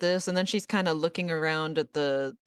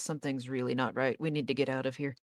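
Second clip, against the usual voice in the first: quiet, rushed speech; 3 semitones lower, 4 dB quieter than usual. A character turns to Val after taking in bad news, speaking in a low voice. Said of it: "in a low voice".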